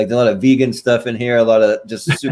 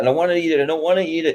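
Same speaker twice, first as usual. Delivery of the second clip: put-on, high, tearful crying child voice; 6 semitones higher than usual. Retelling being forced to eat salad, imitating own childhood crying. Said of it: "crying, saying".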